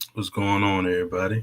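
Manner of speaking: deep baritone voice. Greeting everyone on joining the show, in a baritone voice. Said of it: "You always get the baritone voice".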